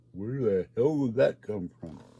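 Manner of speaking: usual speaking voice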